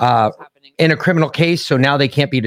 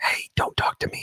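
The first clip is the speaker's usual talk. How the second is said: eerie, breathy, barely audible whisper. Joking between two speakers, one tells the other to stop talking, in a creepy whisper. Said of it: "I'm whispering".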